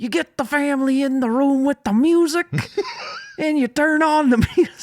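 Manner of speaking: very high pitch with swinging intonation. Describing playing music for the family: Bill Cosby voice. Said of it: "That was your Bill Cosby voice".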